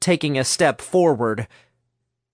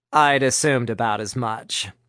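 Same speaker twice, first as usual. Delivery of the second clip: ordinary delivery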